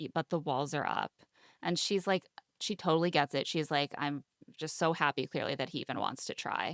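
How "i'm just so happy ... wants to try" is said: ordinary delivery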